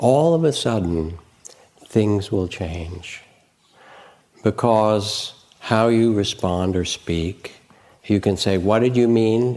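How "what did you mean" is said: riled-up, upset, defensive and angry tone. Showing how a question sounds in conflict: upset, angry way. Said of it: "in a kind of upset, angry way".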